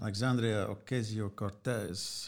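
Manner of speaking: name said carefully with Spanish accent. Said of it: "Great accent".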